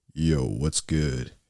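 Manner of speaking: very deep, laid-back bro voice. Retelling a first call with a friend who had a deep voice: imitating a friend's deep voice. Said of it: "back then he had such a deep voice".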